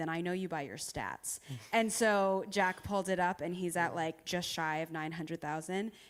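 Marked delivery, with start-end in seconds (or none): 0.0-1.4 mock flat, toneless monotone. Retelling what the app's founder said on a call, imitating a monotone voice. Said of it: "he was like very monotone".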